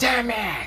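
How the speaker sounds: furious hissing, very high pitch. A narrator voices a character trying to track someone down, with an angry hiss. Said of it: "He hissed in anger".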